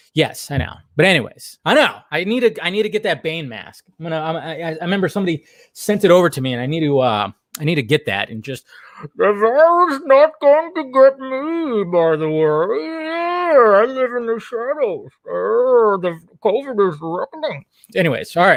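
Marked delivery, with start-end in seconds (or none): 9.2-17.7 very slow, raised-pitch put-on voice, every word dragged out. Putting on a mask and joking about the virus: Bane voice. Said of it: "So there's my Bane impression".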